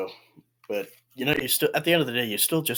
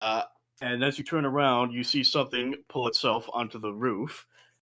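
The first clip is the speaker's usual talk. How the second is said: ordinary delivery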